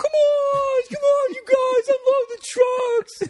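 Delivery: very high, very slow, drawn-out mocking voice. Recalling how they mimicked a man urging them on: mocking high-pitched impression. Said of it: "we would just do this impression of him".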